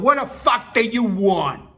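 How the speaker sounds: high yell in a fake New York accent. Retelling confronting a man throwing rocks at the door: put-on New York accent, retelling a yell. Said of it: "I put on my best New York voice and yelled".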